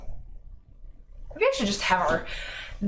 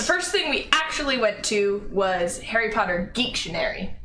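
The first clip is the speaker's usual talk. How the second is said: usual speaking voice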